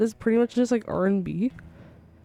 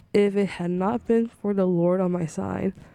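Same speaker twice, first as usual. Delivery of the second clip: plain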